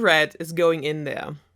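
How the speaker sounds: ordinary delivery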